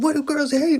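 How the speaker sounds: high, loud mock yelling.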